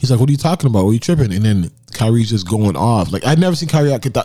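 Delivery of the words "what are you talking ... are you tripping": ordinary delivery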